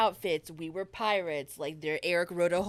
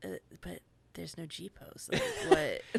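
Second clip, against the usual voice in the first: slow, musing mutter, spoken aloud to himself. Retelling a reaction seen in real time: imitating someone talking to himself. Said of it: "talking to himself".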